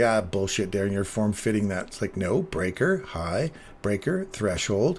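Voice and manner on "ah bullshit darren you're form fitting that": plain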